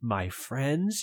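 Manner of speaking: whispering in horror. Told you have many young human friends, you react in a horrified whisper. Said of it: "you whisper".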